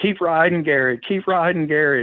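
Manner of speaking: mock, high-pitched screaming cheer. Retelling running from the finish line toward the big screen, re-enacting a scream. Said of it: "screaming for Garrett Gomez".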